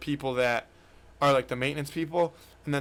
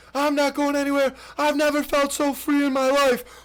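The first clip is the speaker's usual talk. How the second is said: put-on high, carefree screaming; 12 semitones higher, 5 dB louder than usual. Retelling how he refused to come back up from the pond, imitating him screaming. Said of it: "Just screaming at the top of his".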